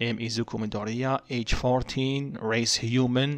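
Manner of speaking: ordinary delivery, nothing marked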